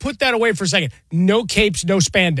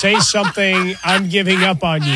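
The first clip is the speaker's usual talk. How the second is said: plain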